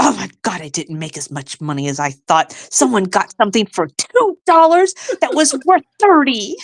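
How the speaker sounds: disappointed, let-down tone. Doing an impression of the niche lady ending her live: impression of the niche lady. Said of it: "And then she would end it and go".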